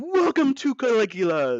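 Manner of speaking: put-on, high, loud, swooping, sing-song shout. Retelling how the agent opens the door and shouts a greeting: retelling a shout. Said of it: "and shouts".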